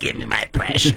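creature character voice. Acting out a player on deck with the bases loaded; Gollum voice. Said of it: "Were you like Gollum from Lord of the Rings?".

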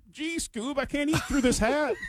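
very high-pitched, slow drawl with dragged words. Imagining what Shaggy would say about his toboggan: Shaggy voice. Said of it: "it might be like".

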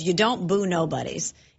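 ordinary delivery

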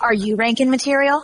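commercial ad announcer voiceover voice. Asked to let the other person hear it, the speaker does a commercial voiceover voice. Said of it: "Let me hear your voiceover voice".

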